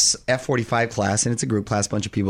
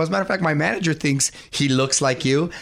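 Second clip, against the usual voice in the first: ordinary delivery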